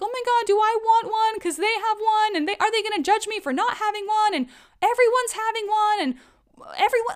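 mock tearful crying, voice pitched way up. Speaker retells seeing a pregnancy announcement online, imitating her own crying. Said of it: "And I start crying like".

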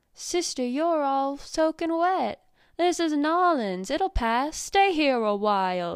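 bad, very slow, heavy Louisiana drawl, high. Retelling how someone spoke to the soaking-wet speaker, in a bad strong louisiana accent. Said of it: "in like the strongest Louisiana accent I've ever heard".

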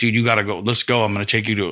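normal talking voice

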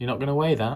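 mock lighthearted, joking, teasing tone. Retelling what she asked on seeing the speaker weigh chicken: retelling a joking question.

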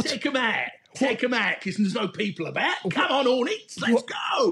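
put-on Cockney accent. Voicing the hornets, Cockney accent. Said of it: "Why have they got a Cockney accent there?".

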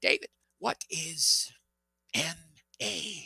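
put-on Ugandan accent. Retelling what the man at the pulpit asked him, in a thick Ugandan accent. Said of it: "spoke with his thick Ugandan accent".

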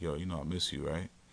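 put-on whisper. Retelling a moment leaning close to a friend: imitating a whisper. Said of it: "I whispered in her ear".

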